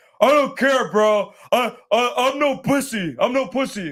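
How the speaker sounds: mock very slow, high, drunken-sounding talk. Retelling what a drunk player at the blackjack table kept saying: imitating a drunk player. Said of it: "talking like that".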